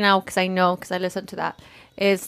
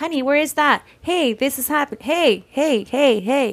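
higher, repeated calling-out voice; 7 semitones higher than usual. Retelling how the husband keeps calling out at home: imitating the husband calling out. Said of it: "my husband's home and, like".

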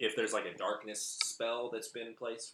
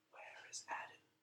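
faint whisper, much quieter. A game master voices a whisper coming from a flame: faint whisper. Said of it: "you hear a faint whisper".

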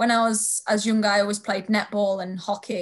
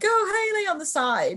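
put-on very high yell, voice cracking mid-shout; 10 semitones higher than usual. Retelling a video of the speaker's dad, imitating a yell that cracks. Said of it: "he's like yelling like".

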